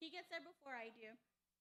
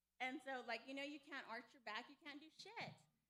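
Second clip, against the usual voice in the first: normal talking voice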